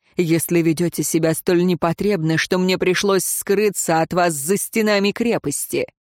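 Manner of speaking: plain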